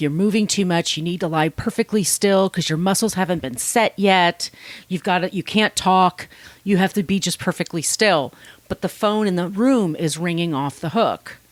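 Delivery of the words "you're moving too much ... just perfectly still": ordinary talk, nothing marked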